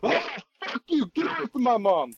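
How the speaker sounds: mock very high, shrill, all-out full-volume screaming yell. Retelling a game scene as the players walk in: imitating Matt Mercer yelling full volume. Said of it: "imagine Matt Mercer just yelling at full volume".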